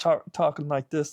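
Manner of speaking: high frog puppet voice. Describing an actor he disliked, the speaker imitates his talking, kind of like a Kermit voice. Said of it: "like kind of like a Kermit voice".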